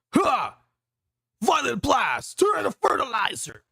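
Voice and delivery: loud, high-pitched shouted villain voice.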